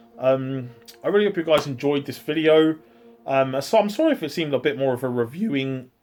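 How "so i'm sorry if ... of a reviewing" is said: voice cracking, breaking. Wrapping up a video to viewers, apologizing, voice cracking. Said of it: "That's second voice crack".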